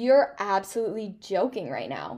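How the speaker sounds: ordinary talk, nothing marked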